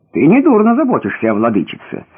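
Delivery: ordinary delivery, nothing marked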